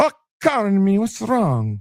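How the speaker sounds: high-pitched put-on Italian accent. Retelling a mother answering her yelling child, put-on Italian accent. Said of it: "I don't know why she sounds Italian".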